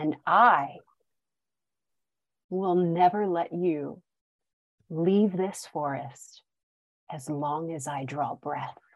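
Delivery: menacing, threatening elf voice. Voicing Tauriel holding a dagger under a captive's chin: Tauriel's threatening voice. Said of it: "And she takes the dagger away".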